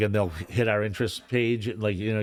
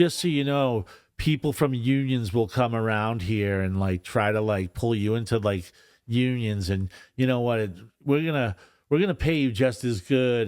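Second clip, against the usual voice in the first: normal talking voice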